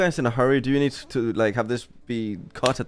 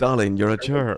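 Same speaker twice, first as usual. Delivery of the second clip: mock, self-important, superior-sounding put-on voice. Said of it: "what the ones who think they are the best sound like".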